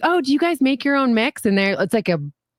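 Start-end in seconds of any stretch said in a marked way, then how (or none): 0.0-1.4 put-on positive, nice voice, slower. Retelling how they ask about drinks when out: put-on positive, nice voice. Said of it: "I say it in like a positive, nice voice".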